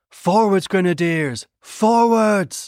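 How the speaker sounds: high, hard, shouted battle cry.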